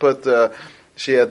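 ordinary delivery, nothing marked

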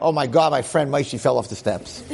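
normal talking voice

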